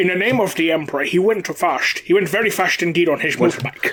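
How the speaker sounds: bad put-on Scottish accent. Imagining Sean Connery narrating an audiobook: worst Sean Connery impression. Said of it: "a trio of the worst Sean Connery impressions ever".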